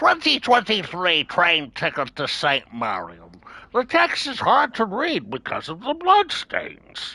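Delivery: odd put-on silly voice, high, swooping. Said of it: "I don't know what that voice was".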